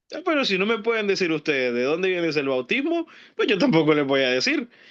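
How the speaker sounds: wry, ironic, swooping sing-song tone. Acting out the words of Jesus from the reading: put-on ironic tone as Jesus. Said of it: "Así con ese tono de, de ironía".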